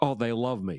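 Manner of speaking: tongue-in-cheek, heavily sarcastic joking tone. Retelling a joking quote from a Senate campaign: imitating John Edwards sarcastically.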